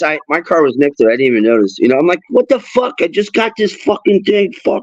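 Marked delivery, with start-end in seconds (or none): 2.3-4.8 mock angry, pissed-off cursing outburst, pitched high. Retelling a key that wouldn't open a car at the mall: imitating own angry past self. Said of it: "I'm all pissed off".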